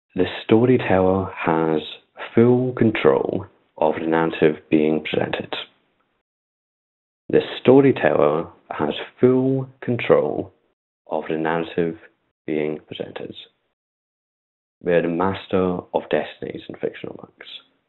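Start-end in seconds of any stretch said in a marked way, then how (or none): 0.2-13.4 very slow, carefully articulated, clear delivery. Lecturer on storytelling states a key rule to the audience, very slow and clear. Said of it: "I'm going to say it very slowly and clearly".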